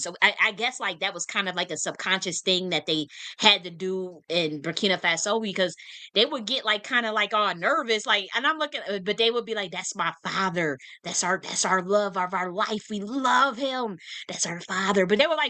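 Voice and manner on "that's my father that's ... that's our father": theatrical whisper. Retelling how people in Burkina Faso spoke of their leader: imitating people half-whispering. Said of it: "be whispering it".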